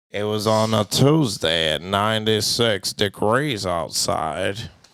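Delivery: low, slow narration voice. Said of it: "Do a Morgan Freeman narration".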